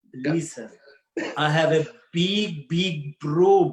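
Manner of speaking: slow, put-on Russian accent. Asked for the most Russian thing, speaking in a Russian accent. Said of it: "what about the most Russian thing you can think of? Russian accent".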